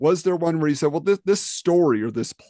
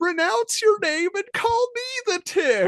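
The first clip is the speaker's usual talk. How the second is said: put-on very high, childish, demanding voice. Retelling a cartoon battle where a rival demands the name: imitating Barry. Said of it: "he's like".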